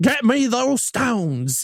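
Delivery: put-on Southern accent, movie villain voice. Rating a movie's cast, the speaker quotes the Southern villain: Gary Oldman Southern villain impression. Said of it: "That was him".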